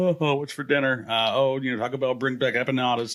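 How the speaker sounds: plain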